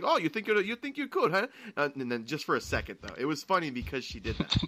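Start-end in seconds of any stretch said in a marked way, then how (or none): 0.0-1.5 put-on Mexican accent, much higher. Recalling a woman who actually did a Mexican accent, imitating her Mexican accent. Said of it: "she actually did a Mexican accent".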